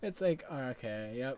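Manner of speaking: normal talking voice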